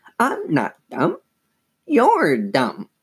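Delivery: high, squeaky ventriloquist-dummy voice. A girl makes her ventriloquist dummy talk back, in a high squeaky dummy voice. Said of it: "made the dummy say in a high, squeaky voice".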